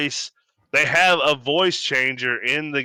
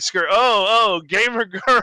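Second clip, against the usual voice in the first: mock over-excited, high, slow gamer-dude voice; 7 semitones higher, 4 dB louder than usual. Retelling how male players react to a girl's voice: imitating excited gamer dudes. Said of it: "all the dudes are like".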